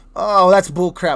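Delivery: plain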